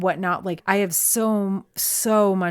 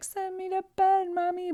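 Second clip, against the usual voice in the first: very high crying dog whimper; 13 semitones higher, 4 dB quieter than usual. A speaker voices her dog, who wants to go to bed, imitating a crying dog. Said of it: "My dog literally was crying".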